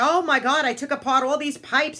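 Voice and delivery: yelling and screaming. Retelling how her husband reacted to the pipes: imitating husband screaming. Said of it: "he's screaming, he's yelling".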